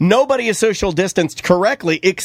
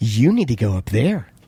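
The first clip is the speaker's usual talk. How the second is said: mock-condescending tone, pitched lower; 8 semitones lower than usual. Speaker retelling a man telling him to move up to the sticker, imitating a condescending tone. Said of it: "he goes, condescendingly".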